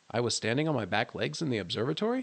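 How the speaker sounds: ordinary delivery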